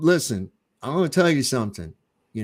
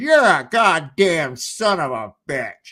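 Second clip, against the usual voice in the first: mock boozy, angry drunk woman's voice, slow; 3 semitones higher, 4 dB louder than usual. Retelling what a drunk woman said to him in a bar: imitating a drunk woman. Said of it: "she's all, like, drunk and shit".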